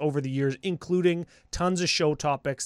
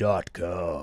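raspy, scratchy voice, lower; 9 semitones lower than usual. Saying the website name properly when asked: scratchy voice. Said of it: "And I got a scratchy voice".

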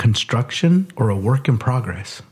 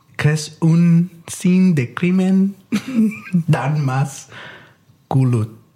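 clumsy mangled French, high pitch, very slow; 5 semitones higher than usual. Trying to say a saying in French when asked: butchered attempt at French. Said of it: "I just butchered that".

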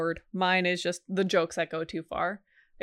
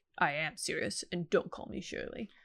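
bone-dry, hushed, breathy deadpan; 7 dB quieter than usual. Quoting your most memorable line from the movie, imitating a deadpan movie doctor. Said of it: "just how deadpan that doctor is".

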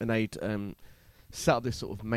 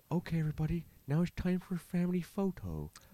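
soothing, lulling, calming, gentle, pitched-up host voice; 7 semitones higher than usual. Retelling what the man playing Father Christmas told everybody, soft-voiced Father Christmas impression. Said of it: "He had a very soft voice".

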